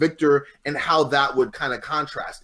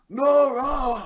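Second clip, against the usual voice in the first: put-on cold villain voice, higher; 12 semitones higher than usual. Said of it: "I do the Michael Ansara voice".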